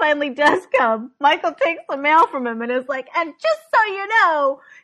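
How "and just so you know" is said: put-on yell, higher and louder. Retelling how Michael takes the mail and confronts the mailman: imitating Michael yelling. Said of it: "yells at the mailman".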